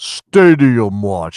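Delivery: deep, booming, big announcer-style intro voice. Answering a request for a deep voice for the segment name: deep voice. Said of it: "Can we get a deep voice".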